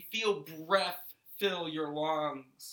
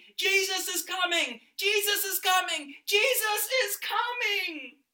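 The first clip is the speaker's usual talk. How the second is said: put-on high, loud, joyful screaming child voice. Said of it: "running down the street screaming".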